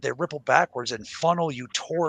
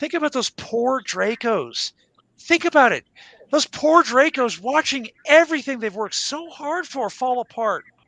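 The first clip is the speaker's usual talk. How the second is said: very high, sarcastic, fake pity and sympathy; 11 semitones higher, 6 dB louder than usual. Asking listeners to feel for the Dracos: sarcastic mock sympathy. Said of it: "Can you guys tell I'm being sarcastic?".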